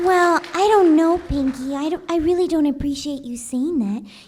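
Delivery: very loud, belted, high-pitched cartoon pony voice. Acting out a cartoon exchange, answering Pinky in a Fluttershy impression. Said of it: "do an impression of one character".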